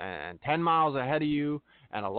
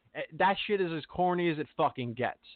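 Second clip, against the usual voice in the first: ordinary talk, nothing marked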